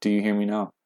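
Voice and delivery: hushed, soft half-whisper. Retelling a voice heard while crying on the floor: imitating a half-whisper. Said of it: "like a whisper in my ear".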